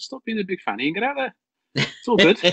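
mock tough-love scolding tone.

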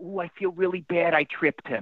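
put-on New York accent. Quoting your mother after she tripped someone, do her New York accent. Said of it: "with her New York accent".

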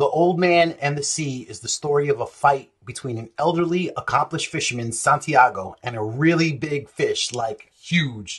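plain

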